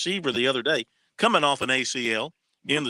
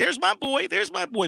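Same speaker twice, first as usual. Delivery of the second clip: very high, shrill, rough, raspy scream; 14 semitones higher than usual. At a game, retelling how a lady behind the speaker was imitating a lady screaming. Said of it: "she was kind of screaming like".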